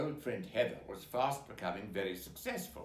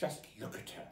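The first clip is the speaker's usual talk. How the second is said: muttering, quieter; 2 semitones lower, 5 dB quieter than usual. [name] comments on a tiny woman at a party: muttering. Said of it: "muttered [name]".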